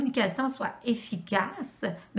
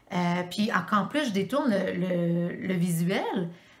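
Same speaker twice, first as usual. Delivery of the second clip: ordinary delivery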